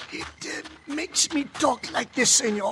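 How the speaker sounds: put-on hoarse, rough voice. Wearing the mask, [name] shows his companion how he'll sound: hoarse Cisco imitation. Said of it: "I got a bad sore throat".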